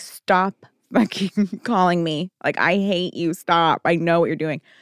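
exasperated, annoyed, fed-up, had-enough outburst. Retelling what she told scam callers who kept phoning, imitating an annoyed outburst. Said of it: "she was getting so fucking annoyed".

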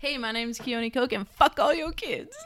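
brash, bold, confident, very loud, full-volume delivery. Redoing a self-introduction after being told to say it with your chest. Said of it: "say it with your chest".

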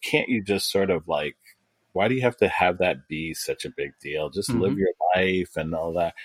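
ordinary talk

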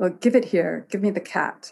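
ordinary delivery

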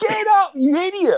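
put-on shouting. Recalling a lucky point in a five-set match, imitating dad shouting. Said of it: "I can clearly remember my dad shouting".

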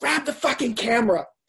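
mock, toned-down scream, a mild yell. Recounting the moment he knew he had to make the movie, re-enacting his own scream. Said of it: "I literally screamed".

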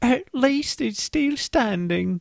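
put-on very high-pitched attempted London accent, old-lady voice. Reading a Londoner's quote from a news story, in an attempted London old-lady voice. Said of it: "You kind of sounded like David Cross doing an old lady".

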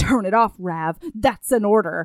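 stern, no-nonsense, very demanding voice. Retelling a man ordering rav to turn it off, imitating a demanding voice. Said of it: "in the most demanding voice".

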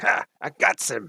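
odd put-on character voice, weird, high and creaky. Game narrator voices a Zentarim fellow just nicked by a crossbow bolt, weird voice. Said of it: "He's got a weird voice".

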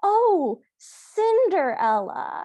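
high, thrilled, delighted dawning realization. Retelling how the prince reacts to the name, imitating delighted realization. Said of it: "he's so delighted by the fact that he figured it out".

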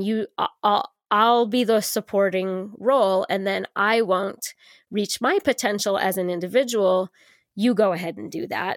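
normal talking voice

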